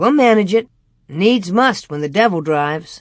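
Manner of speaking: plain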